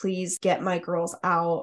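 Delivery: acted-out pleading voice. Describing a dash cam recording, the speaker retells a mother pleading with officers. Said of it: "She was pleading with the officers".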